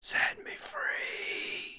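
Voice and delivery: very quiet, soft, breathy, hushed whisper. Narrating a voice that enters your head and speaks: whispered. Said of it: "and just whispers to you, ... I tried to whisper".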